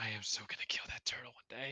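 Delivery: soft, breathy whisper, almost silent. Recounting what someone said about a turtle, retelling a whisper. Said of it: "like in whispers".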